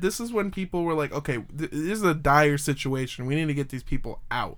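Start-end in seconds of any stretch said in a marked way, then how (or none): none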